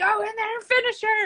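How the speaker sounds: mock coach yell, pitched very high. Retelling a tough fight, quoting the coach: imitating coach Keith yelling. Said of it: "I got my coach Keith yelling at me".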